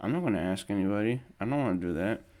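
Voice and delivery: ordinary talk, nothing marked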